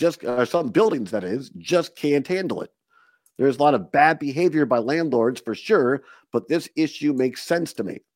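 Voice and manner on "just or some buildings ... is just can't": plain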